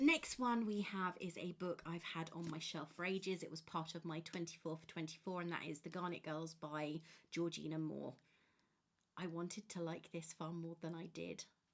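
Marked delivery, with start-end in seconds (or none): 9.2-11.4 hushed voice, said very quietly. Giving an opinion while reviewing a book, said really quietly. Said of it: "I'm saying that really quietly".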